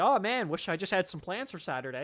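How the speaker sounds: usual speaking voice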